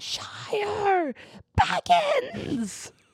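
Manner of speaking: very high, swooping shriek. Retelling a movie scene where a creature screams: Gollum screaming. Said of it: "You sound just like him".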